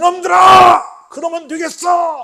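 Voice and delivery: loud scolding yell. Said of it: "목소리를 높여서".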